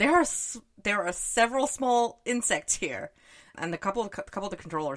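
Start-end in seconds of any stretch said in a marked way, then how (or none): 0.0-3.1 pitched-up mock yell, called out loud. Retelling a book scene where a controller spots insects: imitating someone yelling. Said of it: "And he yells".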